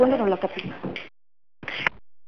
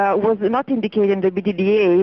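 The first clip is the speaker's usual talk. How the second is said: usual speaking voice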